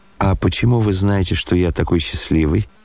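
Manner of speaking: ordinary delivery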